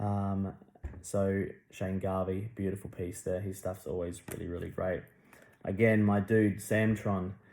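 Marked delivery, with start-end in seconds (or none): none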